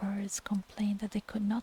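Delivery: ordinary delivery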